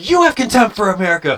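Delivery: high screaming. Retelling how a news anchor answered an official: imitating someone screaming. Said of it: "he's just screaming at him".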